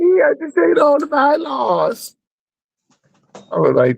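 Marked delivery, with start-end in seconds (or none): 0.0-2.2 mocking put-on voice, pitched higher. Mocking what the Schofield guy keeps saying: mocking Schofield imitation. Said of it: "that's what the Schofield guy be saying".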